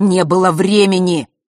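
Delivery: curt, cutting snap, bitten off, very loud. Fesh answers Zakharra's ironic question, snapped. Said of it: "отрезал Фэш".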